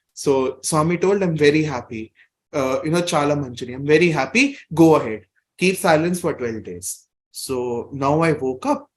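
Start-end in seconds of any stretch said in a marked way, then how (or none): none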